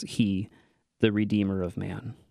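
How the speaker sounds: ordinary delivery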